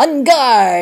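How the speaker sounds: very loud, high-pitched war cry. Narrator reading Harvey's cry as he leaps onto Annabelle, yelling. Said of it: "yelled Harvey".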